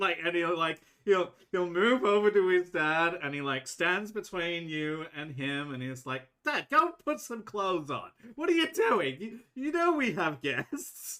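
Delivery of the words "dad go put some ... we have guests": flustered, embarrassed, higher-pitched scolding. Voicing an innkeeper's son moving his undressed dad away from guests: embarrassed son scolding his dad. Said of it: "And he seems very embarrassed".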